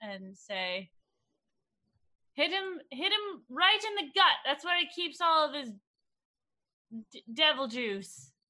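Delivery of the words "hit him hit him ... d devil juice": high, loud, yelled-out call carried across distance. A player's character calls a tip across to Rikiri during the game, yelling out. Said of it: "i'm going to yell out".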